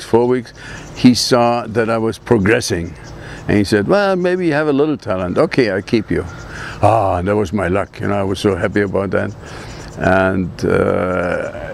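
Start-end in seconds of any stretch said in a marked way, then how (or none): none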